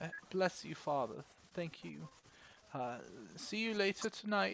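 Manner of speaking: put-on weepy, high old woman's voice, crying through words. Narrating a scene, voicing an older woman after a prayer: crying old woman. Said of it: "is crying and sort of wipes away the tears and goes".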